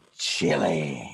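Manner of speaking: creepy, unnerving, unsettling delivery. Retelling a guy's one-word answer about a flavor: imitating a creepy man. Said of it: "the guy looked at me really creepy".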